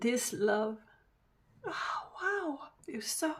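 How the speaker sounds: tearful, crying while talking. Giving a card reading to a viewer, crying while talking. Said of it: "I can't stop crying".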